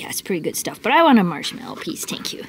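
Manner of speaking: hushed, whispered put-on dog voice. Showing the dog on its new bed, speaking as the dog. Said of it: "It's like".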